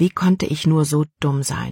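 ordinary delivery, nothing marked

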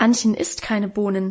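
ordinary delivery

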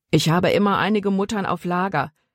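plain

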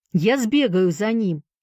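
sudden, called-out exclamation. Sandy answers Johnny, who has asked to see Mr. Mason, exclaiming. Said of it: "воскликнул Сэнди".

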